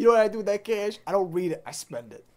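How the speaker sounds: put-on Brooklyn-accented speech. Taunting the other person in the scene, in a brooklyn accent. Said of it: "from the Brooklyn".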